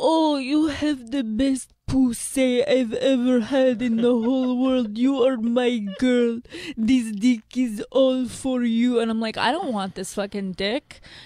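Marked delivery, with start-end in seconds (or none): 0.0-9.0 super old-school, slow put-on Italian accent. Speaker quotes how he talks dirty to them, old-school Italian accent. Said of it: "super old school like Italian accent".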